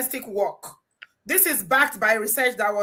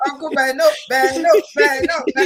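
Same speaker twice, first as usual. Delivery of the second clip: shouting, called out over and over; 4 semitones higher, 8 dB louder than usual.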